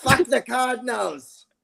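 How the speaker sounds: put-on very high, raspy, rough German accent, spat out. Acting out a line against the Cardinals in a Hitler impression. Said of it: "why did you say that like Hitler?".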